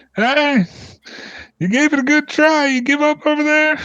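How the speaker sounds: very high, drawn-out shouted call. Voicing a dwarf calling to a worn-out chaser: dwarf shouting. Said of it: "shouts in the thing".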